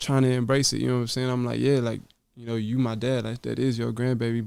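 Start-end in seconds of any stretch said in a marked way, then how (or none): none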